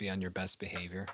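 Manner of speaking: hushed whisper. Warning a companion in character while walking: whispering. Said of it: "I whisper to Gridlock".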